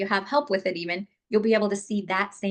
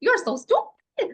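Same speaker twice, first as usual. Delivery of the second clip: goofy, silly voice, much higher, louder; 4 dB louder than usual. Demonstrating how to repeat a hurtful remark, in a silly voice. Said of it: "in a silly voice".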